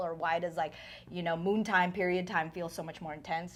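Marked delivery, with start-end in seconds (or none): none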